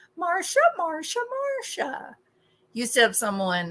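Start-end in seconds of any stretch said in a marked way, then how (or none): 0.2-2.2 very high, pitched-way-up sitcom-sister voice. Told not to go into Jan Brady mode, slipping into a Jan Brady voice. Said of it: "Jan Brady mode".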